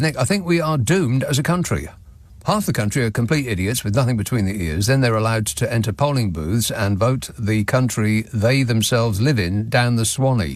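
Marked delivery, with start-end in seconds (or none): none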